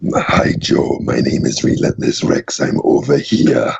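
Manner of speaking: gravelly, raspy villain voice with an Austrian accent. The speaker demonstrates the T. rex character he plays: Relentless Rex voice. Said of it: "sounds kind of like Shredder ... with like kind of like an Austrian accent".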